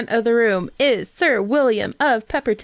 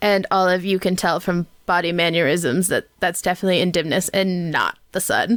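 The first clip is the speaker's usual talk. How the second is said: plain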